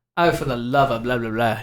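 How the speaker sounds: acted British London Cockney accent. Showing how he reads a Superman villain aloud, Cockney accent. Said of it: "He's going to Cockney".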